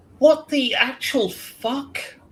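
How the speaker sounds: put-on very posh upper-crust English accent, slow and drawn out. A woman opens the door and shines a light in your face: very posh english voice. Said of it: "A very posh English voice".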